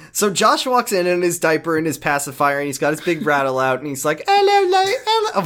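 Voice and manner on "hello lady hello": very high-pitched put-on British accent. Retelling how a clone boy greets a lady: British accent. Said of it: "Why is he British?".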